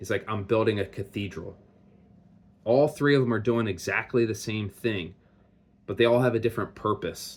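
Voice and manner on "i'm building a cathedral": put-on proud, enthusiastic, zealous voice. Retelling a parable, voicing a bricklayer's answer: imitating someone speaking with pride. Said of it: "with pride, with enthusiasm".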